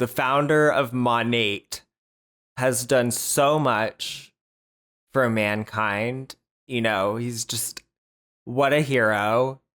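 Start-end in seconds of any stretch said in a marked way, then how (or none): 0.0-6.3 slow, drawn-out, sarcastic, mock-solemn tone of awe. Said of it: "how can you say that and not realize how just absolutely ridiculous that sounds".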